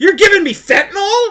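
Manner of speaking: very loud, high, shrill teasing fake outrage. Retelling teasing someone who took it seriously: imitating own teasing mock anger. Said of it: "She thought I was mad. I was teasing her".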